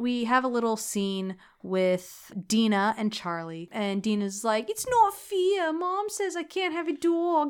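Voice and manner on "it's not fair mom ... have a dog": fake New York accent, pitched up. Quoting a character's line from the movie: put-on New York accent. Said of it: "they're trying to sound like New Yorkers".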